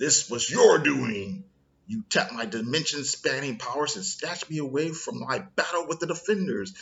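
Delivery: put-on angry outburst. Retelling a comic scene where the golden man arrives: imitating an angry character. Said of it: "he's all pissed".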